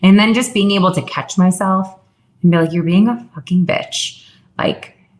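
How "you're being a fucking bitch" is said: usual speaking voice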